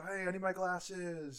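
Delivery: pissed-off, drawn-out, high yelling. Recapping a scene where the president can't find his glasses, mock yelling as the president. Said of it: "he keeps yelling like".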